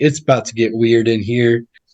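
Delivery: ordinary talk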